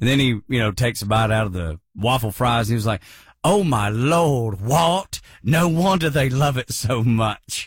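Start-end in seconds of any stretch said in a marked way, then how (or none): 3.4-7.7 very slow, clumsy, bad British English accent. Quoting a man's reaction to waffle fries, in my worst British accent. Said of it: "My worst British accent".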